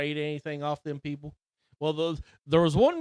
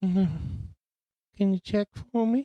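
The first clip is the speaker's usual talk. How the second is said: put-on creepy old man voice, higher; 3 semitones higher than usual. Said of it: "start talking like this".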